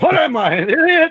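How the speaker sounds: very high-pitched, drawn-out delivery. Answering the other speaker's question with a Doc Brown voice. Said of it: "That was Doc Brown".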